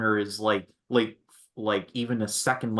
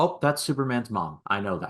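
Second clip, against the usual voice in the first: ordinary delivery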